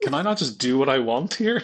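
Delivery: mock entitled, self-important tone. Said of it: "that was the energy".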